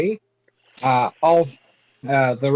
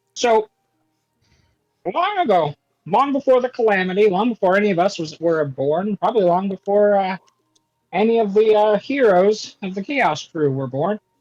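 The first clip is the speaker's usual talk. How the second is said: pitched-up, higher character voice; 5 semitones higher than usual. Player in a tabletop game telling a story in character, in Jiku voice. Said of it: "I'll do this in Jiku voice".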